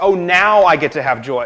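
play-acted, half-sarcastic, not quite sincere exclaiming. Retelling how Sarah reacts to the promise: imitating a sarcastic tone. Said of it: "Almost sarcastically saying".

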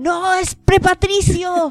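stunned outburst of disbelief. Retelling how he reacted, the speaker acts out a shocked exclamation. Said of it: "puso una cara de shock".

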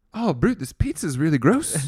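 put-on, muddled mix of Canadian, Scottish, Irish accents. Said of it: "Canadian, Scottish, Irish".

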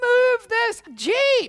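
frantic, very high, very loud, shrill panicked shriek. Retelling standing up in the Jeep and shouting at the game manager: retelling own panicked shout. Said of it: "I shouted at the game manager".

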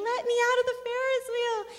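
very high, loud bawling scream. Speaker reenacts being five and stuck on a Ferris wheel, reenacting bawling and screaming. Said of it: "I am bawling and screaming".

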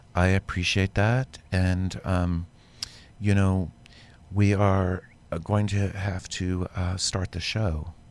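very calm, even, steady voice. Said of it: "calmest voice".

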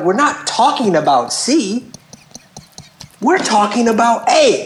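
half-yelled, mild, high-pitched yell. Retelling an argument with a woman who changed the subject, retelling her own yelling. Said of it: "now I'm yelling because I'm like".

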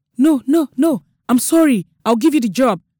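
stammering. A man answers after the narrator breaks into piercing laughter, stammering. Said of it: "stammered Mr. O'Darren".

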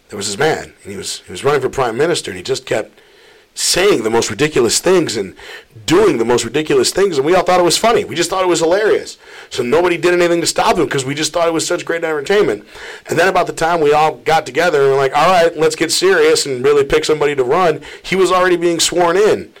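normal talking voice

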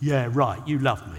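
sarcastic, cynical, slightly rude dismissive tone. Teaching the tone of an English phrase: cynical, slightly rude tone. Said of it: "The tone is cynical and slightly rude".

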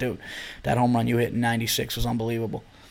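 soft half-whisper under the breath, very quiet. Acting out meeting a baseball player he admires: acting out a half-whisper. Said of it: "I'll definitely have to whisper".

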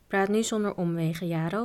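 ordinary delivery

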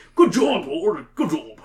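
very jolly, cheerful put-on British voice. Asked what voice they'd do for Max, the speaker gives a British voice for Max. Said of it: "Like a British kind of voice".

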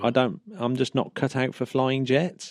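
plain

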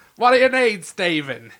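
put-on Australian accent. Imitating Michael Caine on a phone call, bad Michael Caine impression sounding Australian. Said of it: "Michael Caine's not fucking Australian".

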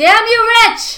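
very loud, high, shrill holler. Calling out to someone far away in new york: yelling. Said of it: "I had to yell that".

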